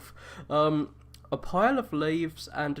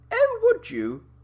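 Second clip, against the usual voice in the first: very high-pitched, posh and regal voice; 8 dB louder than usual. Voicing a game character who is offered help, doing a Queen impression. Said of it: "Why am I giving him the Queen's voice?".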